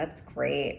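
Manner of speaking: said sarcastically. After reading out a passage for Aquarius, the speaker responds, sarcastic. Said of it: "that's sarcasm".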